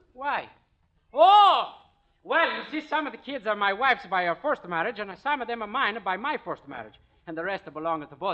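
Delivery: loud, put-on, played-up Italian accent. Playing a loan applicant explaining his fifteen children: Italian accent. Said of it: "this accent ain't from Brooklyn".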